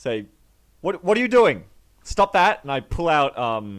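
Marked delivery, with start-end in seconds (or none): 0.8-2.6 very high, shrill, impetuous, rapid-fire shouting. Acting out their character walking toward her in the story, yelling. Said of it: "walking towards her and yelling at her".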